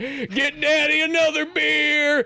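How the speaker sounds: put-on drunk dad voice, very high, very slow, drawn-out. Retelling a game scene where a drunk dad stumbles onto the porch: imitating a drunk dad. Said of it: "the drunk dad where he stumbles".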